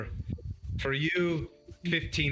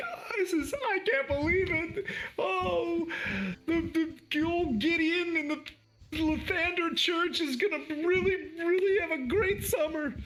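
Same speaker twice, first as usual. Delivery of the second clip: put-on weeping, very high, slow, words stretched. Voicing a character thanking the players for a donation, crying. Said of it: "she just starts crying".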